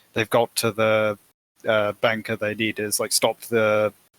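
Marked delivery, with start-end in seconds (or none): none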